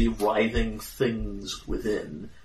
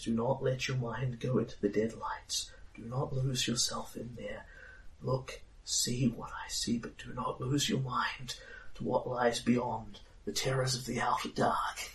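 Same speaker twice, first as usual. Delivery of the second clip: soft, hushed whispering voice; 9 dB quieter than usual. Voicing a woman who speaks to the listener during a vision, whispering. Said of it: "and she is still whispering".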